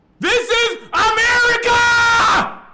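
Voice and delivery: very loud, very high scream, "America" stretched. Retelling what another man in a holding cell kept yelling: imitating a man screaming. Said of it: "he was screaming that shit".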